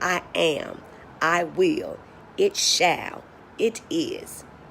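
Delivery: assertive and commanding tone. Speaker contrasting weak self-talk with strong statements, in assertive command voice. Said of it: "Now I'm speaking in assertive command".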